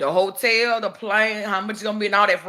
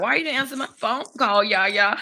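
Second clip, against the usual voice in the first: put-on four-year-old little child's voice. Retelling what her grandbaby will say about a missed call: imitating her grandbaby. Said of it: "She gonna be like".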